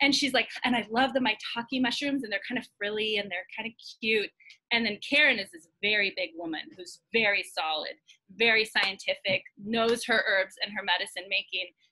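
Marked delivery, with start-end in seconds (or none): none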